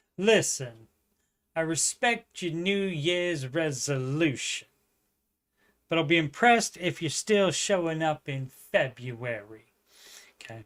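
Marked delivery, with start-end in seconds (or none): 0.2-9.7 attempted put-on New York accent. Reading a quote set at a Brooklyn gym, in a put-on New York accent. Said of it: "I don't know if I can do the New York accent".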